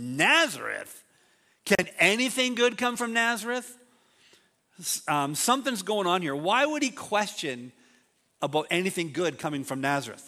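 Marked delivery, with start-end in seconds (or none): 0.0-3.7 play-acted, pitched-up, scornful, dismissive sneer. Speaker retelling Nathanael's reply to Philip, acting out derisive scoffing. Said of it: "you can hear the derision in Nathanael's voice".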